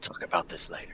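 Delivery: sly, secretive, very quiet whisper. Playing a character who secretly tells Bjorn something: whispering in character. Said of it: "I secretly whisper to Bjorn".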